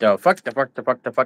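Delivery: repeated sputter like a starting lawnmower. Mocking how someone overuses a swear word, sputtering like a starting lawnmower. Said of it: "you don't sound like you're starting up a lawnmower".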